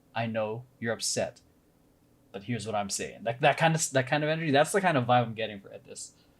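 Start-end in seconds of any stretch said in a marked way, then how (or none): 0.2-3.2 restrained, firm, stern, controlled tone. Illustrating someone who is mad but doesn't yell: acting stern, not yelling. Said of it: "but you don't yell, but you're like, you're, like, very stern".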